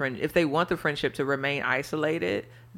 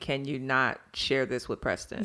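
ordinary talk, nothing marked

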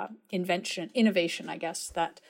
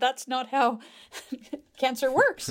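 put-on, pitched-up words broken by laughter; 7 semitones higher, 4 dB louder than usual. Retelling a reply to a physician's question about his cancer, retelling laughing while speaking. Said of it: "And I laughed".

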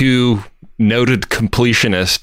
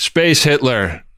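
mock, mild, tossed-off reply called out loudly; 4 semitones higher than usual. Retelling their own answer shouted to someone in the other room, yelling back. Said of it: "And I yell back".

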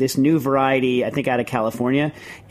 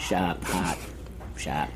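hushed whisper in a Boston accent on sharp, hot; 7 semitones lower, 11 dB quieter than usual. Asking Jack whether words should sound Boston-style, then trying it, Boston accent. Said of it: "should be said with like a Boston-style accent".

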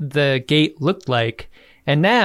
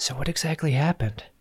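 put-on hushed voice, quieter; 8 dB quieter than usual. Retelling a scene where characters talk in hushed voices: imitating Kira in a hushed voice. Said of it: "everyone's talking in hushed voices".

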